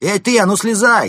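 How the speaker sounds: very loud, high-pitched shouted yell. Someone interrupts a man's speech, shouting. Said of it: "выкрикнул кто-то".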